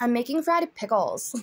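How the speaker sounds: put-on Valley Girl accent, laid on. Repeating the streamer's line about frying pickles: imitating a valley girl accent. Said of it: "the Valley Girl accent just tops off".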